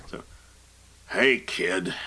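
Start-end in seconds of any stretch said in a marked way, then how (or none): 1.1-1.9 deep, rough voice. Reading a Star Wars scene aloud, voicing a vision greeting the doubting hero: gruff Han Solo voice. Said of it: "I like doing his gruff voice".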